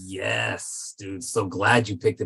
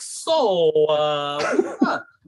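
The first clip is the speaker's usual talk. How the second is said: halting, stammering, stuttered, slightly pitched-up; 7 semitones higher than usual. Retelling own earlier reaction: imitating own stuttering. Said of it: "I'm all stuttering like".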